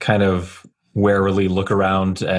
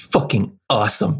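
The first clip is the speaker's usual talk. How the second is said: muttered self-directed grumble; 4 semitones higher than usual. Speaking as Alto while he jacks in, muttering under breath. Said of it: "just like under his breath".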